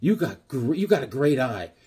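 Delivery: mock sarcastic tone. Retelling what the speaker said to the woman in her kitchen, retelling a sarcastic compliment. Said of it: "So I just went completely sarcastic".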